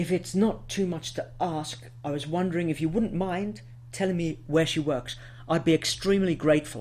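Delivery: overly polite, quickly rattled-off delivery. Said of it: "so polite it will sound annoying and irritating".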